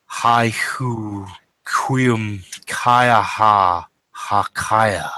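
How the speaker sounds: low, ethereal rasp at the edge of hearing. Voicing an unseen speaker heard at the edge of hearing, in a low, rasping voice. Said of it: "a low, rasping voice".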